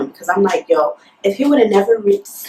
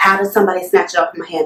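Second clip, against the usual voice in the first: ordinary delivery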